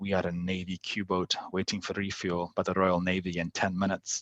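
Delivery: put-on steady, slow, deliberate Scottish accent. Retelling Leavin answering a boat that kept badgering them on the radio: Leavin's Scottish accent. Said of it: "in his like Scottish accent".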